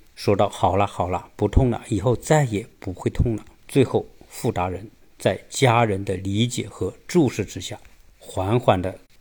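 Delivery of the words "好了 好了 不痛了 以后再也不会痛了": plain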